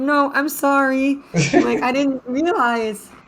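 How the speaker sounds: put-on very high, slow, drawn-out tearful sobbing. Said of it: "she starts, like, crying".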